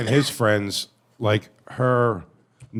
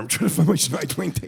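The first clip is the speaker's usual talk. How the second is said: higher, slightly creaky voice; 5 semitones higher than usual. Retelling a friend's impression of an ex-girlfriend driving: imitating an ex-girlfriend. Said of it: "That was always his impression of her".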